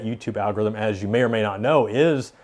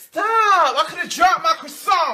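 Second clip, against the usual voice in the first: put-on scream, much higher. A creator listing funny meme phrases for videos quotes one: retelling a screamed meme line.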